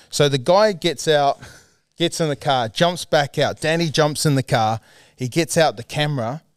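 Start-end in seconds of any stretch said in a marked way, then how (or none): none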